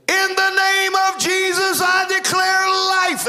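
acted-out, very high, very slow drawn-out yell. Speaker recounting a past prayer, retelling a yell. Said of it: "I yelled".

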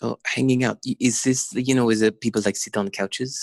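put-on French accent. Retelling what a woman said when they first met, in her French accent. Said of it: "in her French accent".

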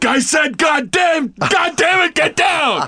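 frantic shouting.

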